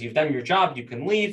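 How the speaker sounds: ordinary talk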